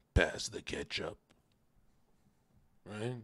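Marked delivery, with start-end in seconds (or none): 0.1-1.1 breathy, near-whispered way of talking. Showing how own voice used to sound on gear: imitating own past voice on gear. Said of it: "This is what my voice used to sound like on gear".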